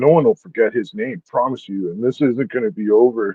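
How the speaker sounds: put-on ominous, menacing delivery with threatening undertone. Retelling what a widow said in a video: imitating a threatening tone. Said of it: "the way she's like".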